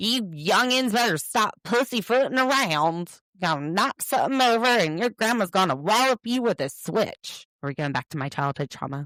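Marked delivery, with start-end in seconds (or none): 0.0-7.5 put-on cranky, grumpy old man voice, pitched up. Joking about a phrase from a show: old man voice. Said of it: "That sounds like some old man".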